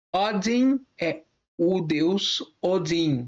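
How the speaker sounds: very slow, careful model pronunciation.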